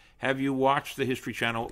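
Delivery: ordinary delivery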